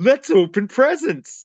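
very high, snide, taunting, mocking sarcastic voice. Retelling a film scene where a captor taunts a family opening presents; mimicking sarcasm. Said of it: "He's just being all sarcastic".

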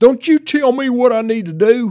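put-on very loud, very high, shrill, angry country-accent outburst. Speaker acting out someone's reply to being told to calm down, in a country accent. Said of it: "not that they would all have such a country accent".

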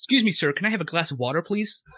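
plain, standard general American accent. Asked by friends to give a standard american accent, the speaker does a standard american accent. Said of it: "give me a standard American accent".

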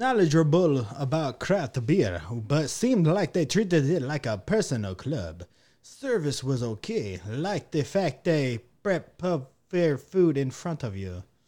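put-on Transylvanian accent, vampire-style voice. Reading a customer review aloud in a Dracula voice. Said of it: "are you Transylvanian now?".

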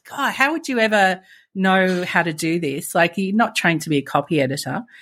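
ordinary talk

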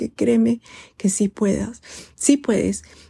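voice catching, choked up, close to tears. Speaking to the listener about reaching their goals, choked up, near tears. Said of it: "se me hace un nudo en la garganta y me salen las lágrimas".

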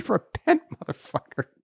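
put-on yelling. Picturing a woman at an open mic shouting at him: imitating someone yelling. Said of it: "yelling at me".

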